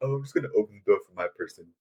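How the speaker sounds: soft, casual, typical dudebro voice. Speaker mimicking how some guys hold the door, impression of a typical guy. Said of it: "that was my guy impression".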